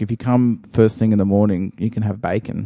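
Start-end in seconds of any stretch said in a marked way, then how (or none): none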